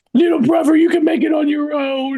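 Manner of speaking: very high, squeaky, goofy cartoon character voice. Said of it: "Sound like Strong Bad said".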